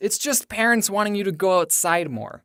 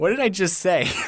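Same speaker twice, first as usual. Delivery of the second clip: usual speaking voice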